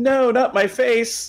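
high, slow, mock pleading tone.

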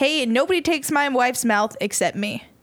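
normal talking voice

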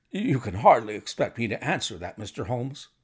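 plain

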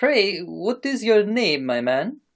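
put-on Italian accent. Reading a story aloud, voicing the farmer's question: Italian-sounding accent. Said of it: "That sounded Italian".

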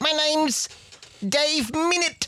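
New Zealand accent. Showing how to say a name in a New Zealand accent. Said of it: "You sound South African".

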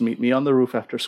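ordinary talk, nothing marked

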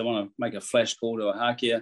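ordinary talk

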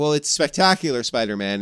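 normal talking voice

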